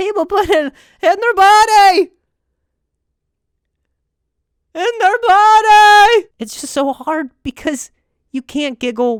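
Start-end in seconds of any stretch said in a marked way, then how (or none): 0.0-6.3 booming, high-pitched stand-up comic voice, words stretched out. Acting out a thought had in a Jerry Seinfeld voice. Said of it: "you're thinking it in a Jerry Seinfeld voice".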